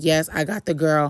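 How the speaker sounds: normal talking voice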